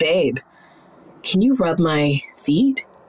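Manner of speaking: unhurried, drawn-out low voice. Showing how a pause adds tease to a simple request: slow and a bit lower. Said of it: "slow down that really simple sentence and just lower your voice a little bit".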